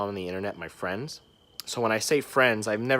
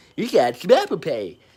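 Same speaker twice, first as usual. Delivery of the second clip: loud, goofy, put-on sales voice, pitched up; 7 semitones higher, 8 dB louder than usual. Retelling showing customers Apple Pay in a made-up goofy voice. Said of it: "did this whole voice".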